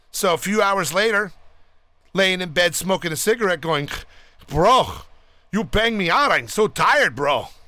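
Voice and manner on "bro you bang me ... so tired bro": slow, drawn-out put-on Lebanese accent. A storyteller quotes a man in bed a few hours later, in a Lebanese accent. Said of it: "I'm doing a Lebanon accent".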